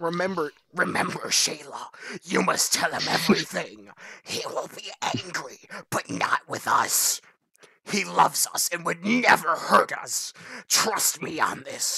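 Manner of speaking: sinister, villainous put-on evil voice. Reading a story aloud, the speaker voices the father answering his daughter: evil voice. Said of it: "I'm not supposed to be doing the evil voice".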